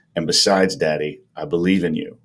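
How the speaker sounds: flat, expressionless voice. Retelling what the son said at the meet: imitating a stone-faced son. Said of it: "he stone-faced says".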